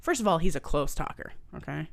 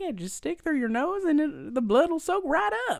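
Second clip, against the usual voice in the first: odd put-on Southern accent, pitched very high; 12 semitones higher than usual. Retelling what she told them, the speaker imitates her weird Southern accent. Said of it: "I don't even know how to do her accent".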